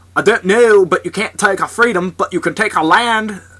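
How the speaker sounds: put-on Scottish accent. Asked whether they can do a Scottish accent, the speaker tries one: Scottish accent. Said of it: "can you do a Scottish accent?".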